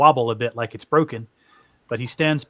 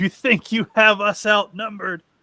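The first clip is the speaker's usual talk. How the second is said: wild, high-pitched, laughing cackle; 9 semitones higher than usual. Voicing a villain whose enemies think they outnumber him: cackling wildly. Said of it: "starts cackling wildly and says".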